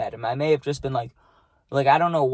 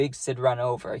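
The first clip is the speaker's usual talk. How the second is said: ordinary delivery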